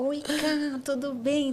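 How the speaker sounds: high, sugary, gentle, sweet little voice. Imitating how Carol sounds on an audio message: Carol's sweet soft voice. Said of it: "Com essa vozinha meiga, suave".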